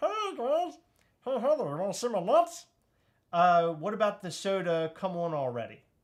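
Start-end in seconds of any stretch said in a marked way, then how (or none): 0.0-2.7 very high, swooping, bouncy squirrel voice. Among friends comparing cartoon voices, showing the voice to Heather: Stitch voice. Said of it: "squirrel voice".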